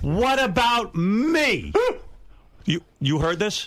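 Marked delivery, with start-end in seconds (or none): 0.0-1.7 loud, high outburst with "me" drawn out. Retelling a drunk friend's outburst at a party: imitating someone getting loud. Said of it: "He gets loud and he goes".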